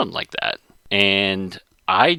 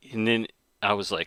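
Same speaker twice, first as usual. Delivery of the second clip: normal talking voice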